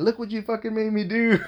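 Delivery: mock yelling, pitched very high. Retelling a woman's account of someone yelling at a man on the ground; retelling a yell. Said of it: "you're basically yelling at him saying".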